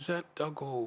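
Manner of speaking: put-on high-pitched Scottish accent, woman's voice. Retelling a phone call from someone's mother: scottish lady's accent. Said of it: "She had a Scottish accent".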